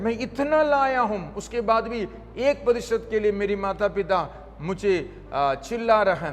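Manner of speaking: plain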